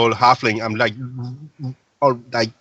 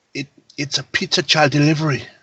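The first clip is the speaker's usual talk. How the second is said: whispered line in a character voice; 3 semitones higher than usual. Whispering in character to the guy holding the barrel: whispering in character. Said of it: "I whisper to".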